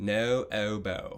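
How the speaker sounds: put-on British accent on "no oboe". Leading students through the oboe mouth shape, saying the words with them; British accent. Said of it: "say no oboe in a British accent with me".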